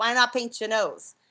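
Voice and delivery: put-on, imitated New York accent. Retelling advice from the teacher of the first magic tricks, Silly Billy's New York accent. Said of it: "he's got a very New York accent".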